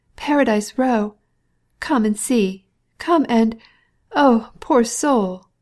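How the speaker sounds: trembling, out of breath. A woman wringing her hands begs the official to come, quivering and panting. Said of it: "she fell to wringing her hands again, quivering and panting".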